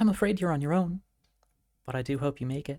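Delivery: whispering softly. Game master voicing a presence whispering behind a player's ear, soft whisper. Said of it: "you hear a soft whisper just behind your left ear".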